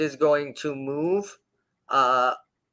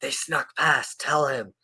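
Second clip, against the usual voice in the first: very dry, rasping creature voice. Game narrator voicing a creature speaking to another: dry, raspy voice. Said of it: "in this very dry, raspy voice".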